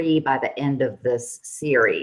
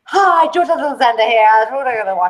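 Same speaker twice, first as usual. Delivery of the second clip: mock fast talking, higher and louder; 9 semitones higher, 5 dB louder than usual. Imitating another speaker's greeting: imitating george talking fast. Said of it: "I don't talk as fast as George".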